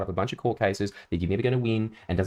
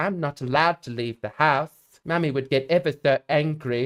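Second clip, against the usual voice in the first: put-on high, creepy horror-movie little girl voice; 6 semitones higher than usual. Demonstrating the voice heard in horror movies, in a horror-movie little girl voice. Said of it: "The little girl voice. It's that it's that same voice that you hear in all these horror story horror movies".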